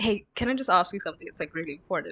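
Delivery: put-on deadly serious, weighty, earnest tone. Retelling how someone asks a question, mock-serious tone. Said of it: "in a very serious tone".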